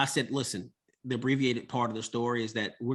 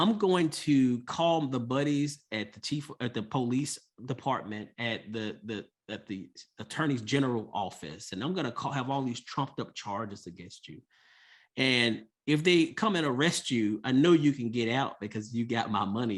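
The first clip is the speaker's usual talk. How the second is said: ordinary talk, nothing marked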